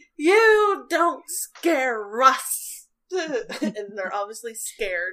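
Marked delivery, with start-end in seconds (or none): 0.2-2.9 very loud, very slow, halting, broken shout. Narrator voices creatures raising their weapons; shouting in broken Common. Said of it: "start shouting in a very broken comic".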